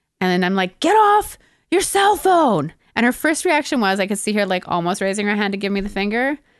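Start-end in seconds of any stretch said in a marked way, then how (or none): 0.8-2.7 mock, very high, swooping, drawn-out scream. Retelling confronting a woman on her cell phone, retelling own screaming. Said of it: "I'm screaming at this point".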